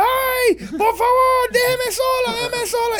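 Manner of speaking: shrill, very high, drawn-out desperate cries. Speaker retells a woman given cookies by their grandmother; retelling a woman screaming for help. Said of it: "la mujer empieza a gritar".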